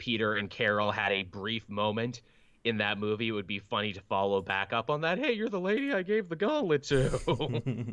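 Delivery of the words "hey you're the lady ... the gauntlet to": put-on squeaky, very high, eager teen voice. Imagining Peter Parker meeting Carol again, squeaky teen Peter Parker. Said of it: "making Peter Parker sound like squeaky voice teen".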